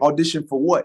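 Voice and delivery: normal talking voice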